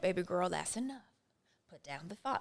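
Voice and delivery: soothing, nurturing, gently scolding granny voice. Speaking to herself as her own grandmother, nurturing granny voice. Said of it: "I usually do it with a nurturing mother voice. I don't know, it's like some granny or something".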